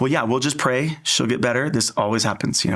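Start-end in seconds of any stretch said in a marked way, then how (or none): none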